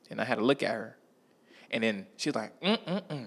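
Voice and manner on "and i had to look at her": ordinary delivery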